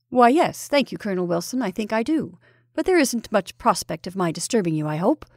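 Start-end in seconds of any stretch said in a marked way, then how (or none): none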